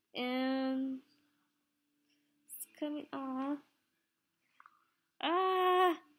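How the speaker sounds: sharp pained yelp. Ripping off a plantar wart while recording, crying out in pain. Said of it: "It's hurting so bad".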